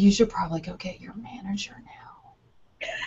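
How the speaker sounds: slow, very quiet, hushed whisper. Retelling telling a confused man to get his manager while the baby slept, retelling her whisper. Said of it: "So I'm like whispering".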